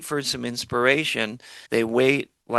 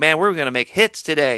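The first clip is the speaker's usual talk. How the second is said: excited, pumped-up, all fired up; 4 semitones higher, 5 dB louder than usual. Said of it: "he's all excited".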